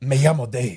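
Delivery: put-on fake L.A. Spanish accent. Riffing with co-hosts on a bar name, introducing oneself in a put-on L.A. accent. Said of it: "I'm also kind of going Antonio Banderas".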